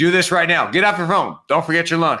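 commanding drill sergeant voice, pitched high. Explaining how parents direct children, demonstrate giving orders in a sergeant voice. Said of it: "This is my sergeant voice".

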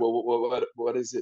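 fake cartoonish stammer. Retelling answering an actor's idea, mock stammer like Elmer Fudd. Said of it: "I stammered, like Elmer Fudd".

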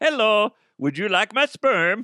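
put-on Dutch accent. Acting out a man offering his sperm online: put-on dutch accent. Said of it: "Identical to their accent".

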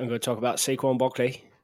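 put-on British accent. Doing accents at a co-host's challenge, in a British accent. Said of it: "If I go talk in my British accent".

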